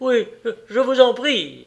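high, begging, imploring pleading tone. Thaddeus Sholto answers Holmes's call to go inside, begging. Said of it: "supplia Thaddeus Sholto".

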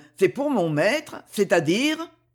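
ordinary delivery

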